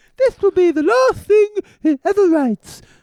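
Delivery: stately British politician voice. Act out Margaret Thatcher reacting to a boy's handwriting, as a Margaret Thatcher impression. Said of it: "That's my Margaret Thatcher impression".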